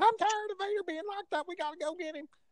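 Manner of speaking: put-on thin, very high-pitched Carolina accent. Recalling a wrestling manager's reaction, doing Jim Cornette's high Carolina voice. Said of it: "got this really high North Carolina or South Carolina voice".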